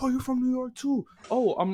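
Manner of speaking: very high-pitched, buzzing, excited high-energy chatter. Retelling meeting two rappers from new york: imitating excited high-energy talk. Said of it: "same very high tier of energy".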